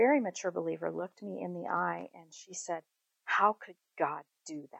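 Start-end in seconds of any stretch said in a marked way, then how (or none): 3.3-4.8 bitter angry venomous tone, quieter. Retelling what a grieving friend said: imitating a venomous question. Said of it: "there was such venom in her, in her voice".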